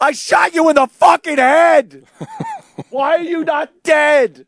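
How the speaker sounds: high-pitched, loud, furious yelling.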